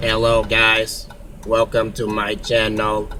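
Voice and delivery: low, flat, slow monotone robot voice. Greeting viewers at the start of a channel video, robot voice. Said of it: "That's my robot voice".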